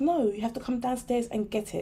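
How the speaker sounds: ordinary delivery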